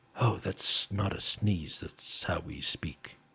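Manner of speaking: echoing voice, as if inside the head. In the scene, the mushroom speaks inside the others' heads; echoing mushroom voice. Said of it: "like it's echoing".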